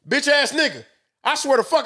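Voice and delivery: full-fledged fury, high-pitched, letting rip.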